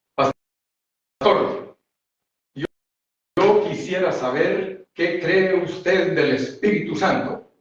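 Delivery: self-important preacher voice. Retelling a pastor who tried to humiliate the speaker at a seminar, imitating his pompous powerful voice. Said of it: "así con voz potente de esos siervos que se creen mucho".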